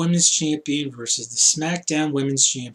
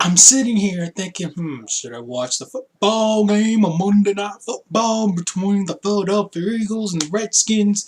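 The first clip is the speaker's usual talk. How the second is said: fake Southern accent, high and loud; 7 semitones higher, 5 dB louder than usual. Speaker musing whether to watch Monday night football: fake Southern accent. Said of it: "Why am I having a fake Southern accent?".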